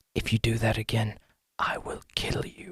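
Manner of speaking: very quiet, very hushed, menacing whisper. Voicing a character who leans in to Jimmy: whispering a threat. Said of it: "she kinda leans in to whisper something to Jimmy".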